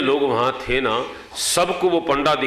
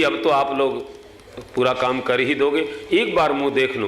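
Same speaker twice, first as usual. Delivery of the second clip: ordinary delivery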